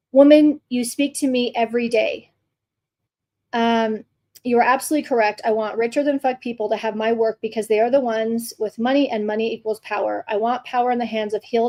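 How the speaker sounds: usual speaking voice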